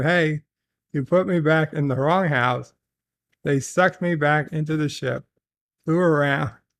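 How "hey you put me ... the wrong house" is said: ordinary delivery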